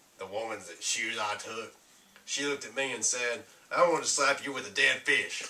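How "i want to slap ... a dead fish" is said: ordinary talk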